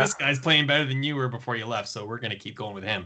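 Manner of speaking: plain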